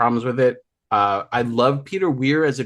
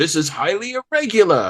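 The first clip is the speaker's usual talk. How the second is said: put-on high, indignant, outraged, crusty old man voice; 5 semitones higher than usual. Listing stock movie lines of old deans: imitating an outraged crusty old man. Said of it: "crusty old men being outraged".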